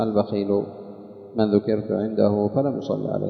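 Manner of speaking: usual speaking voice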